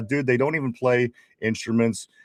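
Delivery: ordinary delivery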